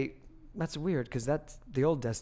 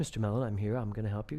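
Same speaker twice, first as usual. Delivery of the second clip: put-on calm, sexy English accent, lower, faster; 3 semitones lower than usual. Retelling a guy who came to help with your computer: calm, sexy english accent. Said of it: "calm, in uh, English accent, perfect, very sexy".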